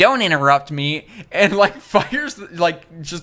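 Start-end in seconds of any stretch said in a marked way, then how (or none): 0.0-1.1 put-on nerdy voice. Describing a video, the speaker quotes Bill Gates in a nerdy Bill Gates voice. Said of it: "nerdy voice is like".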